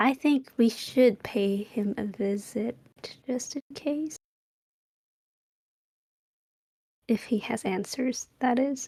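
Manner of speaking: voiced, spoken stage whisper. During a group mystery game, a character speaks to Cyril, half-whispering. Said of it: "She's whispering this to uh".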